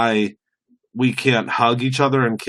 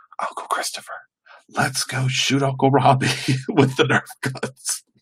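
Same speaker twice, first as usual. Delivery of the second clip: put-on kid's whispering voice. Retelling what a nephew would say in his ear: imitating a child whispering. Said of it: "he would whisper in my ear".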